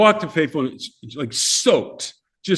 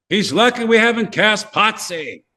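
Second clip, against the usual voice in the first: put-on loud, pitched-up voice filling the room; 6 semitones higher than usual. Retelling an audition, quoting Anson Williams in his loud voice. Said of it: "I hear this loud voice".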